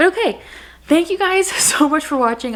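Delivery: breathless, out of breath. Wrapping up a video and thanking viewers for watching, out of breath. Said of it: "I am like out of breath from talking so much".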